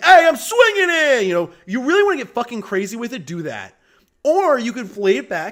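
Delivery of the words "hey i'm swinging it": loose, strong New York accent, high and loud. Speaker describing how Spider-Man talks in Amazing Spider-Man 2; loose New York Spider-Man voice. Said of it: "where he talks like this, really loose".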